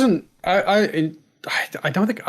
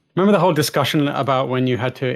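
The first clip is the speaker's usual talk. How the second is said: usual speaking voice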